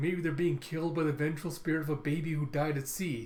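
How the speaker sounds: usual speaking voice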